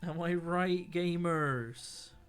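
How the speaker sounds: loud and very slow, "gamers" dragged out long. Joking to the others, saying gamers: Stephen Merchant voice. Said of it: "saying gamers like I'm Stephen Merchant".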